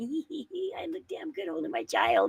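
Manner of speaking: high, swooping, preening, sing-song self-admiring voice. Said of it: "It's like".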